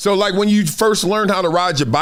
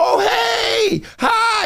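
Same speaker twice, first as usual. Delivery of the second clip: very high, fake-friendly, long drawn-out "hey". Imitating the fake hello that everybody does: mock fake friendly hello. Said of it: "that fake ass hello that everybody does".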